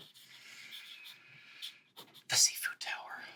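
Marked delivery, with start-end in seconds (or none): 2.3-3.2 soft whispered aside. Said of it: "and then I just off to the side".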